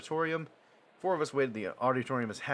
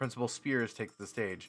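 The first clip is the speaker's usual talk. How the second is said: usual speaking voice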